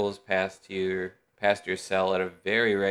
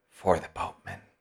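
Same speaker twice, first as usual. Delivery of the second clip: whispered words. A character holding a single small metal object speaks, whispering.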